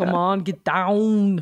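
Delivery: put-on Austrian-accented voice. Impersonating Arnold Schwarzenegger urging others on climate action: Arnold Schwarzenegger impression. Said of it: "your impersonation of him".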